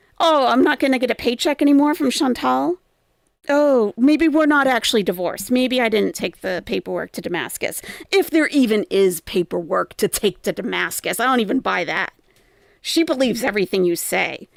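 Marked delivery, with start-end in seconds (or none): none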